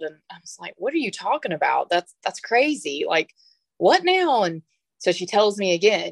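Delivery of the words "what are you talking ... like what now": mock baffled, confused, puzzled tone with swooping pitch. Retelling own reply to upset news, imitating own puzzled reaction. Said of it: "look at her real puzzled".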